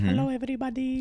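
tiny, puny, very high little guy's voice. Retelling a story about a drunk guy, imitating how he talks: puny little guy impression. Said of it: "He talks like this".

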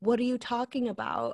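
ordinary talk, nothing marked

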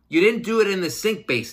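mock yell. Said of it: "I'll even yell at him".

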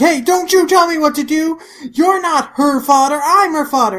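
acted heated yelling. Recapping a scene where one character snaps at another, acting all heated up. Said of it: "all heated up".

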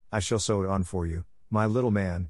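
ordinary delivery, nothing marked

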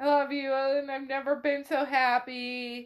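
mock crying while speaking. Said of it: "And he's crying too".

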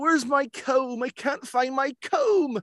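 put-on Cornish accent. Recalling a role in a detective story, acting out a line in a Cornish accent. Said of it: "They wanted like a Cornish accent".

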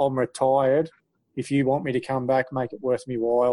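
ordinary delivery

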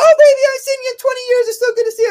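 play-acted very high, loud, wild, over-the-top crazy voice. Retelling stepping inside and greeting someone at the door, crazy over-the-top voice. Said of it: "I'm talking in this like kind of crazy voice".

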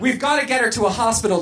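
usual speaking voice

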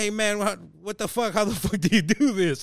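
play-acted, high-pitched, shocked, freaked-out disbelief. Retelling scammers reacting to being caught on webcam: imitating people freaking out. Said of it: "They're all tripping".

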